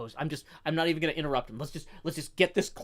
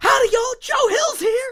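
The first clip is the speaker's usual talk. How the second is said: very high, very loud hollering yell; 13 dB louder than usual. Retelling someone rounding a corner at work: imitating someone yelling. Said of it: "they will yell that".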